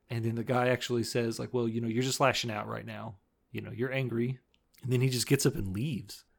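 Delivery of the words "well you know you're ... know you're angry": plain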